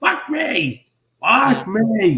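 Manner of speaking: very high, very slow, drawn-out demon voice. Describing a favourite movie scene, imitating the demon voice. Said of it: "The demon voice itself".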